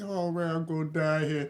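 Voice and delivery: put-on despair, acted-out fear. Retelling what his baby said when she thought she'd die; imitating someone thinking she'll die. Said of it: "She thought she was gonna die".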